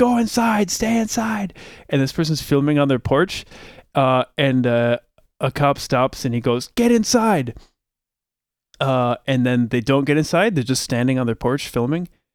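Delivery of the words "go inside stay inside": mock yell, much higher. Describing cops walking down a street beside a troop transport, imitating cops yelling. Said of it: "they're yelling at everyone like".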